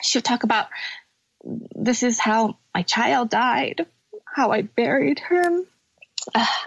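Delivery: emotion welling up, tearful, close to crying. Speaker recounting a woman's story of her child's death, getting emotional, near tears. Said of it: "i'm okay with crying".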